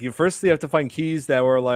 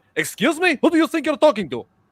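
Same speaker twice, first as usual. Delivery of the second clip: mock furious, angry tone, pitched very high; 13 semitones higher, 3 dB louder than usual. Retelling talking back to a man who started cussing at them, retelling an angry retort. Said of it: "and I'm just angry, very angry".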